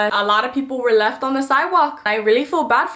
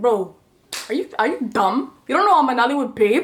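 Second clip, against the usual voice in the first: put-on taunting tone, Nigerian accent. Retelling what a man's friends sitting behind them said, in a Nigerian accent. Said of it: "I can hear his friends saying in a Nigerian accent".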